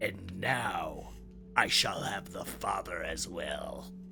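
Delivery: rasping, gravelly voice, dropped deep and low. Narrating to listeners sneaking up, voicing an unseen figure: deep, gravelly voice. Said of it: "you hear this deep, gravelly voice say".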